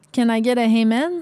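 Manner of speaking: put-on Quebec French accented speech. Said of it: "tu le dis quand même avec un accent québécois".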